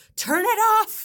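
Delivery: high, loud annoyed outburst.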